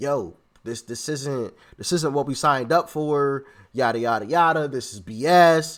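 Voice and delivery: ordinary talk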